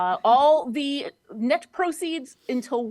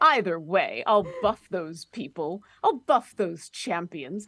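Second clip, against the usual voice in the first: put-on vampire voice, lower; 6 semitones lower than usual. Reading an ad as the character Astarion: Astarion voice. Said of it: "Astarion here".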